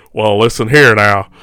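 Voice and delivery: put-on cowboy accent sliding into rockabilly rock'n'roll style. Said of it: "Now it's turning into [name]".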